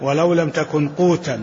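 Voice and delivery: ordinary delivery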